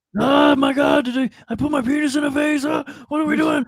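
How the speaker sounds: high-pitched squeaky exclaiming. Doing an impression after a show is mentioned: Seth Rogen impression. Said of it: "That's my Seth Rogen impression".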